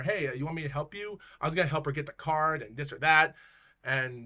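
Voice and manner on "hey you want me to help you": usual speaking voice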